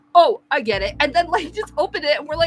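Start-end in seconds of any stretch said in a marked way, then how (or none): 0.1-0.9 put-on heavy, thick Italian accent. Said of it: "a really heavy Italian accent".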